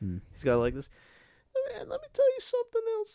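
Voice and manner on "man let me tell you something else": very high, airy, hissing voice like a deflating balloon. Describing a man's voice he loves, the speaker imitates it: voice like air escaping a balloon. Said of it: "it sounds like air escaping a balloon".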